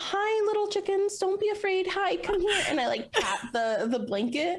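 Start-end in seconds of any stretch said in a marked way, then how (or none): 0.0-2.6 fairy-tale princess voice, very high. Kneeling to coax chickens onto a cloth, princess-like voice. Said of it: "the most princess way possible".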